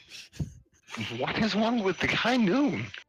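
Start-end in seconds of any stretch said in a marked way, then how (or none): 1.2-2.9 very high, gushing, enthusing character voice. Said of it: "She's like".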